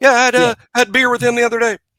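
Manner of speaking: put-on bragging. Describing what a one-upper says: imitating a one-upper bragging. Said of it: "they'll go like".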